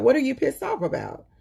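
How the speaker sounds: put-on nonchalant, casual tone. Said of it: "she said it so nonchalantly".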